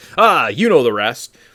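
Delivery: big, loud, drawn-out shout. Retelling a final fight scene quote: imitating Beast yelling. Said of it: "he just kind of yells".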